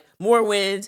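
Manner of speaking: put-on completely enraged, loud, furious delivery. Retelling a film scene where the character orders more wind: imitating furious Christof. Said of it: "completely furious".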